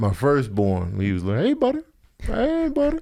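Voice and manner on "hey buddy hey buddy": very high, silly, put-on baby-talk voice. Retelling the voice used when talking to a baby son. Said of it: "I remember doing a certain voice".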